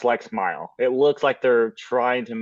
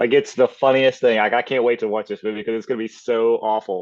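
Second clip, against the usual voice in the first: ordinary delivery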